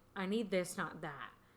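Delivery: normal talking voice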